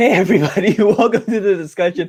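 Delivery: words breaking into laughter. Opening the show and welcoming everybody to the discussion, laughing while talking. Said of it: "I'm laughing because".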